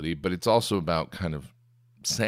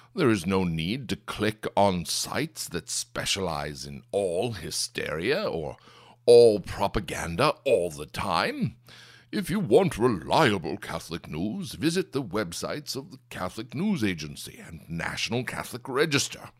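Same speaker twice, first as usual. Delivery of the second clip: put-on bloviating, pompous commentator voice; 2 semitones higher than usual. Reading the writer's New Year's resolutions aloud in a George Weigel impression. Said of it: "my amazing George Weigel impression".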